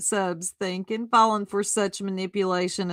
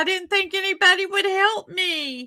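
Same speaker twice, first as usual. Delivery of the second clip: put-on, very high, rushed, near-tears gush; 11 semitones higher than usual. Teasing the other speaker who is thanking a PayPal sender, mock crying. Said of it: "She's going to cry".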